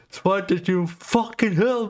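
acted, shrill, very high-pitched yell. Retelling how a man yelled at a woman heckler, retelling a shout. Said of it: "Og så råber Rå".

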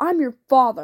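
harsh, rising voice. A father answers his daughter's refusal to go with him, voice harsh and rising. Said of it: "his voice harsh, rising with the crack of the lash".

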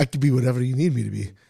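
put-on very deep voice. Speaker jokes with the other speaker, in a put-on deep voice. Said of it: "It's a deep, deep voice".

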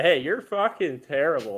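cheerful, smiley, sunny tone on biting words. Retelling two drivers trading insults: imitating a smiley jab. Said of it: "they were so smiley about it too".

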